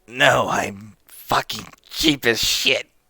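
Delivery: unhurried, slow, drawn-out, frank, candid tone. Voicing a goblin answering a player, said with a big smile. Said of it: "he says that with a big smile".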